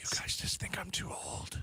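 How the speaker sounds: hushed, soft, breathy, barely voiced whisper. Doing a whispered bit about fixing the country: Joe Biden whispering. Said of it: "the Joe Biden whispering".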